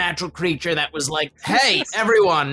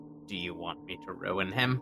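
very quiet, calm, hushed, very low voice; 9 semitones lower, 13 dB quieter than usual. Flint looks over at June and asks her a question, very quiet and calm. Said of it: "very quietly and very calmly looks over".

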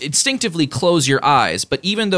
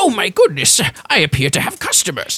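put-on grandmotherly gnome voice, higher pitch; 4 semitones higher than usual. Narrating a scene, the storyteller voices a figure behind the shelf: gnomish grandmother voice. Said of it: "a small gnomish grandmotherly figure pops up".

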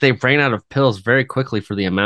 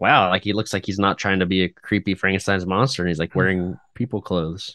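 plain

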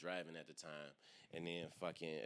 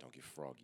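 put-on whisper, lower and quieter; 5 semitones lower, 7 dB quieter than usual. Retelling a grab from loss prevention: imitating a whisper. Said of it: "whispers in my ear".

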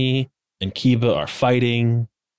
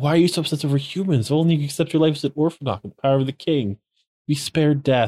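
fast, high-pitched whining. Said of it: "Kiba's, like, whining too".

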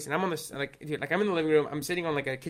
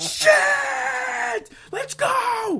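put-on full-lung scream, higher and louder; 7 dB louder than usual. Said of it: "at the top of my lungs".

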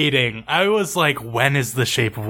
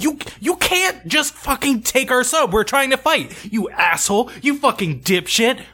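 mock very high, raging, furious yelling tirade; 10 semitones higher than usual. Retelling a woman yelling at someone taking their sub, imitating an angry yell. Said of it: "she flips like six times".

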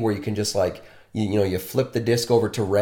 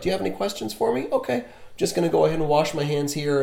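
high, fast, polished professional-sounding patter. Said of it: "just doing my whole, like, you know, it's gonna be excellent".

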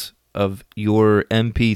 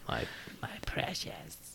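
hushed, breathy, breathed-out whisper; 5 semitones lower, 22 dB quieter than usual. Joking after a burp-like sign-off, doing a Smeagol voice. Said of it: "That sounded like if Smeagol burped".

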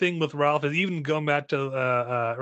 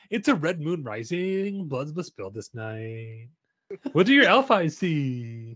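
put-on sing-song, swooping surfer valley-girl drawl, see stretched. Pitching a band member as Legolas, giving her lines: Janice's surfer valley-girl voice. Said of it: "surfer valley girl tone".

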